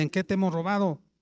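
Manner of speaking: biting, sarcastic comeback. Retelling the people's reply to god: imitating a sarcastic reply. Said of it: "le responden sarcásticamente".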